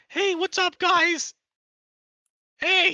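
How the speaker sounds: squeaky, very high-pitched goblin voice. The speaker tries to find his goblin voice: goblin voice. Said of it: "this is absolutely my goblin voice".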